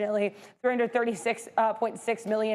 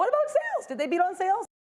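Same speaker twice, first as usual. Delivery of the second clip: very high voice, cracking and breaking up; 10 semitones higher than usual. Reporting quarterly earnings and asking about sales, voice cracking. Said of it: "My voice cracked there".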